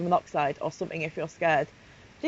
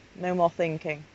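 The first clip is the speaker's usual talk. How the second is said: plain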